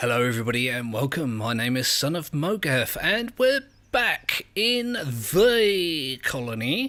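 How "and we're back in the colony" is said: odd, silly, high, very slow drawn-out voice. Opening a Colony Survival session, the host says this in a weird put-on voice. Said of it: "I said that in a weird voice".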